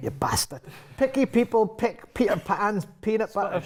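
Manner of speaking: Scottish accent. Getting into the accent first, then trying a tongue twister: Scottish accent. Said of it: "the way that he got into a Scottish a- accent".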